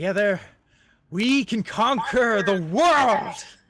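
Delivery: very loud, thrilled, excited voice. After praising their champions, the speaker rallies them, excited. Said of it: "I'm actually getting very excited about this".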